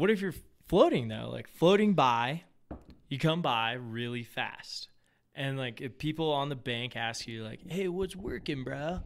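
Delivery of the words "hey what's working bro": put-on high Valley bro accent. Imitating people on the bank asking what's working: imitating a Valley bro. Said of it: "I don't know if they're Valley Bros".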